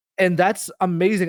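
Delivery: ordinary delivery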